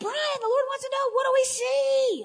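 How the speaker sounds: very high, loud yell with see drawn out. Retelling how she called out to brian, reenacting her own yell. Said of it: "I'm yelling it".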